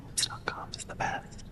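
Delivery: whispering. Trying out the same line in different ways, now whispering. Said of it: "What if we whispered it?".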